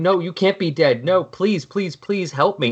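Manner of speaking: mock imploring, begging, pleading tone. Retelling a character pulling at the Flash's costume for help, mock-begging.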